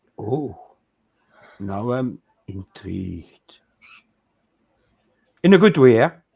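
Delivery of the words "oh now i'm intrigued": very low, slow, drawn-out devil voice. Reacting to a description of Yoda's design, the speaker puts on a devil voice. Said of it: "I shouldn't have used my devil voice for that".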